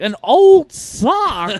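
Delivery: very high, loud, swooping amazement, "sock" stretched out. Imitating a TV host interviewing someone about a whiteboard: Huell Howser voice. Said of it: "I was doing, uh, Huell Hauser".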